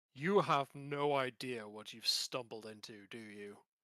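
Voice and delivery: loud, resounding, echoing voice. Voicing a horse skull speaking into the listeners' heads, echoing voice in your head. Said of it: "says in a voice that echoes in your heads".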